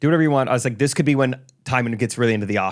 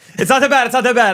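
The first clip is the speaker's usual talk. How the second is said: choked up, high voice cracking and breaking; 11 semitones higher, 6 dB louder than usual. Previewing a co-speaker's diagnosis for listeners, voice cracking, choked up. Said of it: "I didn't mean to voice crack".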